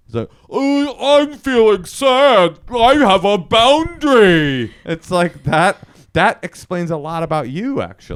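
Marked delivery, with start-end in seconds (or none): 0.4-4.7 very slow, high, raised voice, each word drawn out. Doing an impression of a person being honest about their feelings, sounding like Lennie from Of Mice and Men. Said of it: "sounds like of mice and men".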